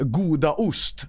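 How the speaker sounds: "goda ost" in slow Swedish pronunciation.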